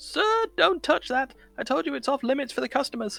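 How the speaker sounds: very high, loud, terrified, petrified cry. Voicing the shop owner as a customer reaches for the curtains, petrified crying out. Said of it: "the petrified voice of the shop owner cries out".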